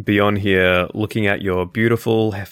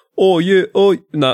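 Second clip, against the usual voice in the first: high, attempted British accent, comes out New Zealand; 10 semitones higher, 6 dB louder than usual. Trying out a voice for Kieran, who has dipped out, imitating Kieran's accent. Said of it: "That's New Zealand".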